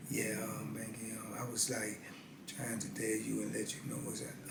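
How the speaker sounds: barely audible, very quiet, low mumble. Retelling a prison friend who talks so low: imitating a friend talking very low. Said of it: "he talks so low".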